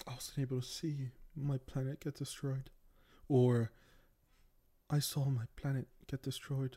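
sudden, soft put-on British accent. Speaker acting out Kara Zor-El's reaction, in a British accent. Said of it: "I don't know why I'm doing it in a British accent".

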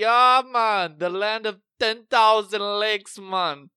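thick, shrill, booming, high put-on Jamaican accent. Retelling a commercial, a man from minnesota answers a question in a jamaican accent. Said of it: "everything he says in Jamaican accent".

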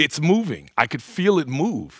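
high, loud, exultant cry, swooping pitch. Speaker acts out a boy touching a moving hand, retelling a triumphant cry. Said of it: "he would cry in this triumphant voice".

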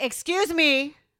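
loud, high-pitched voice full of sassy attitude. Retelling own reply in a startling encounter, imitating a big attitude. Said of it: "I said it with a big ass attitude".

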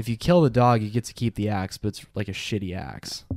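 ordinary delivery

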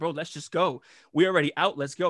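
ordinary talk

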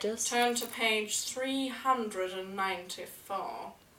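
very slow, deliberate, each word drawn out. Put on the spot by friends, doing a Snape voice. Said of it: "Can you do a Snape voice?".

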